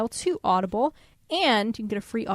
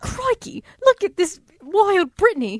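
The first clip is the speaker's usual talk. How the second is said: high, loud, poorly done put-on Australian accent; 10 semitones higher, 7 dB louder than usual. Narrating Brittany's excitement like the Crocodile Hunter: Crocodile Hunter Australian accent. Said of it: "I can't do an Australian accent".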